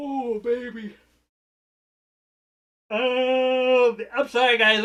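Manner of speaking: speaking through a yawn. Talking to the guys while trying to keep the energy up: yawning. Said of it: "I'm yawning".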